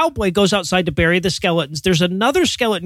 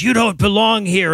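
put-on demon voice. Retelling a scene where a voice speaks to a man in a barn, demon voice. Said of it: "a demon voice comes up and goes".

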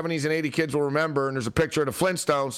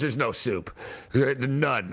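acted, very slow, dragged, disdainful and contemptuous; 3 semitones lower than usual. Retelling a girl's reply to the speaker's question, mock-disdainful. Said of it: "She went with disdain".

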